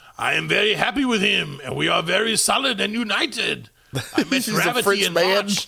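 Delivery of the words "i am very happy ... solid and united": clumsy, bad put-on French accent. Reading out a quote from Gail, a model maker based in Bordeaux; bad French accent as Gail. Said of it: "I have to try and do a French accent".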